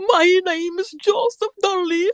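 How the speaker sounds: put-on stage Irish accent. Quoting a film line with the flag: Tom Cruise's bad Irish accent. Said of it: "that's how he learned his accent".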